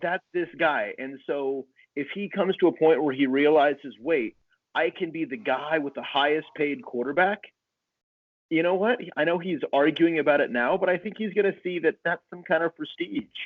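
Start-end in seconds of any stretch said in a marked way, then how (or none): none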